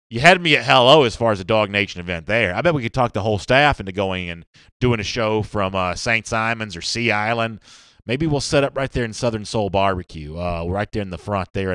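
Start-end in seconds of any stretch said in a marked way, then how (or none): none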